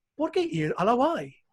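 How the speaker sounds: Spanish words spoken in a put-on British accent. Showing how a British guy would say the line in Spanish, British accent. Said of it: "I can see the British in there".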